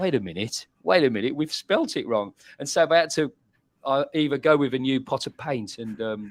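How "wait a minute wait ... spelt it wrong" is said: ordinary talk, nothing marked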